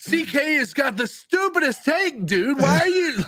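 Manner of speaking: angry yell, screaming. Imitating a listener arguing alone in a car: imitating a listener screaming. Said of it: "Why are you screaming about Deshaun Watson?".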